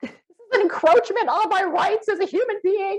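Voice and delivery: play-acted, frantic, very high-pitched screaming. Retelling when others tried to come through the door: retelling a scream. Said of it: "I'm freaking out and I'm screaming".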